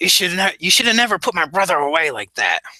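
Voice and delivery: nasal gang leader type voice. Voicing a one-eyed gang leader threatening the party: nasal voice. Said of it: "a nasally voice".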